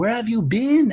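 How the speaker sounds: very high, bad put-on French accent. Retelling what a man named Laurent said when he came back: bad French accent as Laurent. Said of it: "That's my bad French accent".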